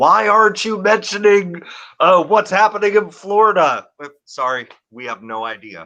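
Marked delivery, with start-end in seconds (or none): 0.0-3.9 high-pitched, demanding, hollering yell. Imitating viewers complaining in the comments: imitating viewers yelling. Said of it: "yelling at us, like".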